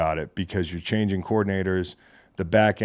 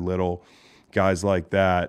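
ordinary delivery

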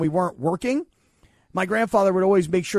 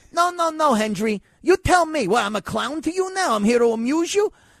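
acted, defensive rant, higher pitch; 8 semitones higher than usual. Acting out the funny-guy scene as Tommy: imitating Joe Pesci.

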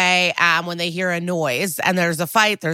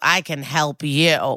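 mock cocky delivery; 3 semitones lower than usual. Retelling a scene where a young man addresses a deadpan receptionist, imitating cocky. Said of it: "he's cocky and he goes".

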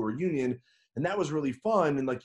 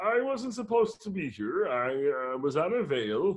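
slow, drawn-out teacher voice; 4 semitones higher than usual. Imitating an annoyed teacher remembered from school: imitating Mister Oster's voice. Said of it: "that voice is very close to what he sounded like".

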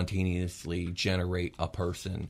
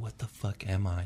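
slow, teary voice near tears; 4 dB quieter than usual. Voicing a character whose eyes are full of tears: teary-eyed, near tears. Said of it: "she's really watery-eyed".

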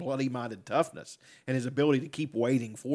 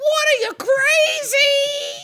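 very high, loud, slow, drawn-out, shrill, crazed yell; 12 dB louder than usual. Retelling a scene from Rocky Four: Paulie impression. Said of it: "Paulie's like".

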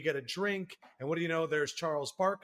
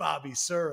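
put-on very happy, gleeful tone. Retelling how someone named an old basketball player: retelling a very happy remark. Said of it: "very happily goes".

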